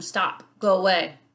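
ordinary delivery

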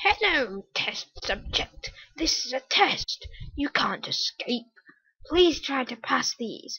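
unsettling, creepy, disturbing put-on voice. Reading a game map's story aloud, voicing the disturbing voice. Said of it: "Terrible voice".

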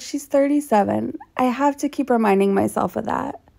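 ordinary talk

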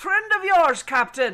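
shouting at full voice. Within shouting distance of the captain as enemies try to board, shouting across a distance. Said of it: "I'm close enough to perhaps shout at him".

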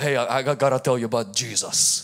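heavy put-on Russian accent, low pitch. Retelling approaching drunk people outside bars late at night, in a russian accent. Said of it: "in this Russian accent".

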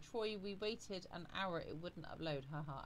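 normal talking voice

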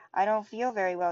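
plain reading voice

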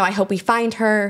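usual speaking voice

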